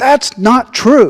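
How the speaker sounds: put-on really loud Italian accent. Retelling a grandmother calling out from down the hall during a session, really loud Italian accent. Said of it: "with a really, really loud Italian accent".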